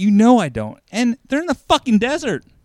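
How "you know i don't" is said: put-on anger, higher and louder. Retelling a movie scene where a character gets angry: imitating someone angry. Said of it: "she gets angry".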